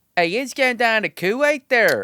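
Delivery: Pittsburgh-accented speech. Joking about going down to Camp Buehring in Kuwait, in a Pittsburgh accent. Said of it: "that's that Pittsburgh accent".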